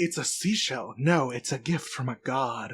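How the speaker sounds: put-on weird voice. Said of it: "he says it in that weird-ass voice".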